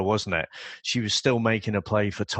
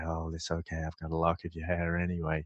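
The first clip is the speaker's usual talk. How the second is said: put-on very calm delivery, lower and quieter; 4 semitones lower, 8 dB quieter than usual. Retelling what a man said, mimicking a very calm tone. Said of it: "he gave in his very calm tone again".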